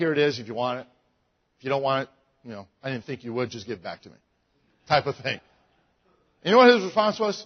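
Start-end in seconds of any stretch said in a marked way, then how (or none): 0.0-4.2 offhand, nonchalant, passionless delivery. Retelling handing a stranger a church brochure: imitating own nonchalant tone. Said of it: "Just kinda like".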